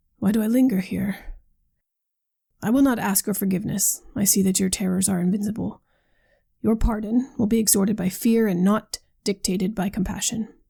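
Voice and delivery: plain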